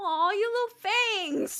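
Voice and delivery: mock snide, petty, very high coo. Retelling a character's petty remark to another character: petty mocking tone. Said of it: "she did say that out loud".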